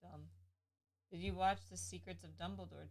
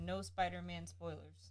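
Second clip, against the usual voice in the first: usual speaking voice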